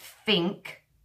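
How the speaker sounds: Cockney accent, think said with f for th.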